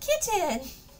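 high-pitched shout. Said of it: "I would yell".

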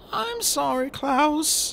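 timid, meek, very high-pitched voice. Violet apologizes to her brother klaus, meekly. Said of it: "Violet said meekly".

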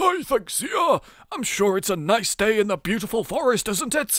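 bear character voice. Deciding what voice Smokey Bear should have in a game, Smokey Bear voice. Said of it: "He should have like a bear voice".

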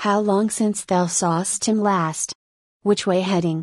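ordinary delivery

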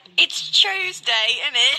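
put-on British accent. Joking about how British people talk: mock British accent. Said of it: "British people be like".

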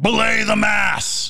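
sudden, piercing, very loud, very high-pitched yell. Retelling a ghost tour guest's sudden outburst: imitating a very loud shout. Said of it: "he just shouts very loudly".

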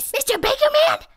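frantically whispered. Narrator reads a donut character phoning the baker; frantic whisper. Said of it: "Arnie frantically whispered".

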